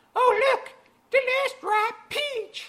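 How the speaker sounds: poorly done put-on female voice, pitched very high. A man voicing a woman's line: put-on female voice. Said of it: "I don't do a good female voice".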